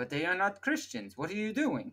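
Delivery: fake Russian accent with swooping intonation. Retelling how Russia answered France and the UK, put-on accent voicing Russia. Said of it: "What was that accent?".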